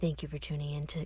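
calm, soothing tone. Asked to give a podcast goodbye in the most soothing voice: soothing voice. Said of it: "give your best goodbye in the most soothing voice possible".

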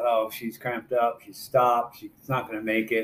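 ordinary talk

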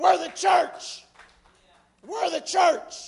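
passionate, very loud, high preacher-style yell. Speaker addressing the church folks, yelling. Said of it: "Sorry, I'm yelling".

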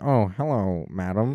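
nerdy, dorky, overly gallant, fedora-tipping manner. Mocking a dorky Redditor tipping a fedora: imitating a dorky Redditor. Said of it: "a dorky Redditor, like, tip fedora, be like".

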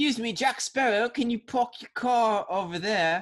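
put-on posh British accent, high, loud. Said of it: "a posh british accent".

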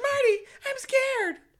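very high, loud, shrill, belted cartoon voice. Quoting a scared couple from a SpongeBob scene: voicing SpongeBob characters. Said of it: "And then they're like".

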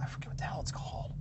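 soft, unvoiced whisper.

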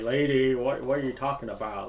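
put-on thick American accent. Retelling a scene, quoting Judd's reply to Casey: Judd's thick American accent. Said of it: "really thick American accent".

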